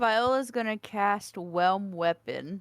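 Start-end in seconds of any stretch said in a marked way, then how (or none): none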